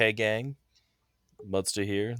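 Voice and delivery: deadpan, flat, one-note monotone delivery. Listing video channels, the speaker mimics one host's intro: MTG Mudsta monotone impression. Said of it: "a very nice monotone kind of voice".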